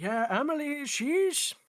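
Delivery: put-on high-pitched elderly man voice. Answering a question about Emily in character: old man voice. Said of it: "you're doing the old man voice".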